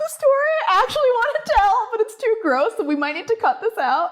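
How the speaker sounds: very high, giggly talk through laughs. Speaker laughing about a story they want to tell, laughing while talking. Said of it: "I'm laughing because".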